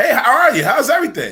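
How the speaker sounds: bright, polite, cheerful office voice, very high pitch.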